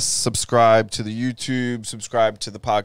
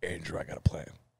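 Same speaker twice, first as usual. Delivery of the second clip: deep, very quiet, hushed, serious voice; 6 semitones lower, 14 dB quieter than usual. Imitating a serious seven-year-old brother telling Andrew something, in a Batman voice. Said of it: "Why are you talking in Batman voice?".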